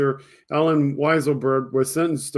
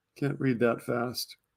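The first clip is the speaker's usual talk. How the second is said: normal talking voice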